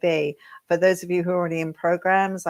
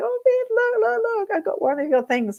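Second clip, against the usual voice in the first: mock very high, excited shriek, one word drawn out. On an elevator, the speaker recounts a buyer of one of her pieces: imitating a woman screaming. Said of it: "she's screaming at me going".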